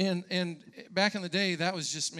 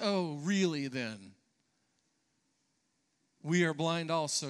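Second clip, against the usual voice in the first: self-satisfied, smug, scornful, mocking tone. Imagining the Pharisees questioning Jesus, mock-smug question. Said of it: "I can imagine the question being smugly asked".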